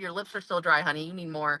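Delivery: put-on loving tone. Retelling what a doctor said at the ER: imitating a doctor speaking with love. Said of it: "but he said it with love".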